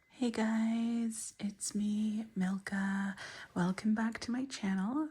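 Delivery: low-key, close to the mic, guys stretched. Opening a channel video with the camera very close, talking quietly. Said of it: "Sorry that I'm talking so quietly".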